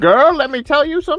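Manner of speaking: put-on very high, sassy girl chatter voice. Explaining girl slang by imitating women talking together: imitating girl talk. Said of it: "they get together and they're like".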